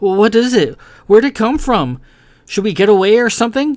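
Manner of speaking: frightened, high voice. Narrator voicing Kai questioning Carahil about a strange creature, fearful voice. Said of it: "Her imagination began to run away with her. / She could hear her fear in her own voice".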